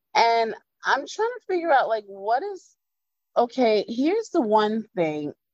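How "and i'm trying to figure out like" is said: usual speaking voice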